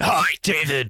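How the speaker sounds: beefed-up, muscular bodybuilder voice. Asked by the host to say hi, the co-host answers in a muscular bodybuilder voice. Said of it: "I was trying to sound like a muscular bodybuilder".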